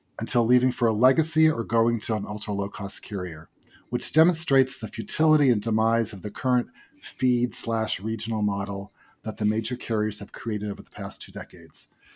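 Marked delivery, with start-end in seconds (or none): none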